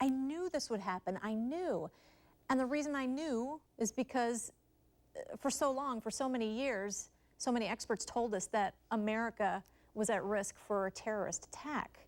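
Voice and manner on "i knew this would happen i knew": normal talking voice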